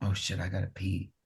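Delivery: soft, hushed half-whisper under the breath. Retelling a moment on a bus, imitating own half-whisper to a friend. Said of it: "I turn to John and I whisper".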